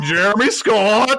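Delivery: high voice cracking and splitting mid-word. Repeating the co-host's name, imitating own earlier voice crack. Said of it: "It's like".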